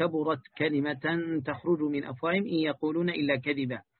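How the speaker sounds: ordinary talk, nothing marked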